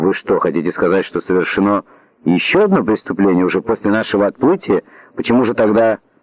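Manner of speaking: ordinary delivery, nothing marked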